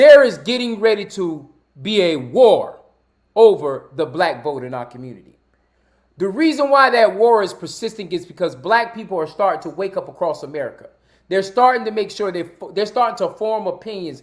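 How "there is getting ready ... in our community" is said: drawn out, slow, low, deliberate, each word spaced. Speaker repeats a point because the audience didn't hear it; saying it slower. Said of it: "I'm going to say it slower".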